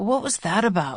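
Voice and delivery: groggy voice thick with sleep. Narrating, a man with eyes shut asks after a phone call, voice thick with sleep. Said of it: "voice thick with sleep".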